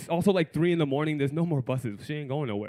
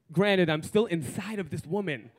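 plain

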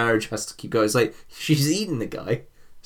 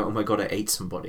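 mock crying voice, quieter; 3 semitones lower, 6 dB quieter than usual. Imagining a character who reacts to eating someone: imitating someone crying. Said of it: "they started crying and go".

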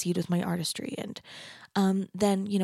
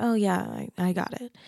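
slow, drawn-out, easy-paced delivery. Retelling how mom answered about the album: imitating mom's reply. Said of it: "literally just like this".

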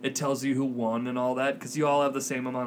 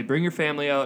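ordinary talk

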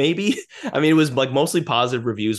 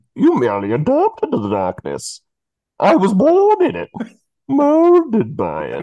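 loud, booming, swooping, muffled masked-villain voice; 9 semitones higher, 6 dB louder than usual. Covering the mouth first as instructed, giving the villain's line as a Bane impression. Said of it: "preview of what Bane's voice sounds like".

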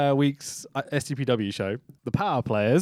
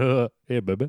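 put-on cartoon teenager voice; 2 semitones lower than usual. Retelling a wrestler's taunt to a woman: Beavis and Butthead impression. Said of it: "does a Beavis and Butthead impression by going".

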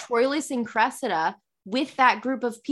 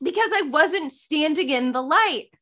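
ordinary talk

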